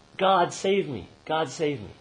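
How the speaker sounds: high-pitched loud yelling. Telling a joke about a man hanging from a cliff branch, retelling a yell for help. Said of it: "And he yells out".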